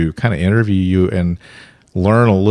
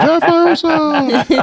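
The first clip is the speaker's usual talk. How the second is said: very high wrestling ring-announcer call. Introducing a podcast guest by name, in a wrestling announcer impression. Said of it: "That was my best wrestling imp-".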